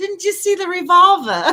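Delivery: oddly placed, high-pitched put-on British accent. Recounting a weird line that was said, in a British accent. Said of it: "a weird thing to say in a British accent".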